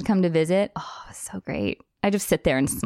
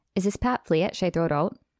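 plain, proper put-on Minnesota accent. Retelling what a roommate said: imitating a Minnesota accent. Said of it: "a proper Minnesota accent".

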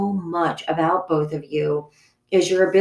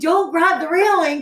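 shrill, very high screaming; 11 semitones higher than usual. Retelling a runaway wheelchair ride down a mall ramp: imitating own past screaming. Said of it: "and I'm screaming".

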